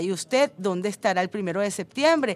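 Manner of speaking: plain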